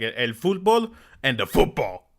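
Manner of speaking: put-on Spanish accent. Joking about two kinds of football, saying it in a Spanish accent. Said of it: "add in that Spanish accent".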